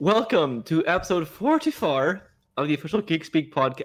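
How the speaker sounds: faint Irish lilt creeping in. A podcast host opens the episode with a slight Irish accent. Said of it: "I guess I'm getting that Irish".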